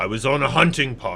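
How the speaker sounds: put-on big, tough-sounding voice with a tough accent. A captive of the orcs introduces himself, in a tough accent. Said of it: "It's a tough accent".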